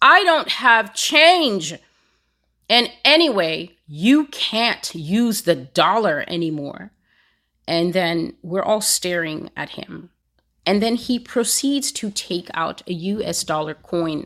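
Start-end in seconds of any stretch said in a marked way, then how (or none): 0.0-6.9 loud, showy, dramatic proclaiming voice. Retelling how a man answered a woman about having no change, retelling a loud remark. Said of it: "He says so loudly".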